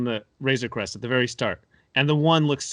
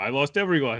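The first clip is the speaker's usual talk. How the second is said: mock flat monotone delivery. Imitating how she delivered her line: imitating a flat monotone line reading. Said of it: "the monotone voice that she has".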